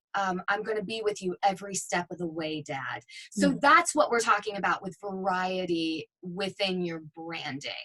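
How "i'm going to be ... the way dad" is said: put-on serious dad voice, commercial-style read. Showing a serious dad read from a demo: imitating a serious dad read. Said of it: "more serious".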